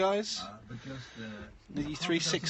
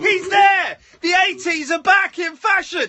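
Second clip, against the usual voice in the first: loud, booming showman shout. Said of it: "Shouts and he makes some noise".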